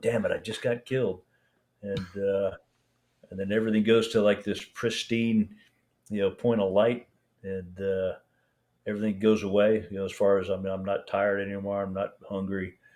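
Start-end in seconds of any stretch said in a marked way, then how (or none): 0.0-1.2 mock swearing muttered under breath. Retelling being hit while driving: imitating swearing under breath. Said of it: "swearing under my breath".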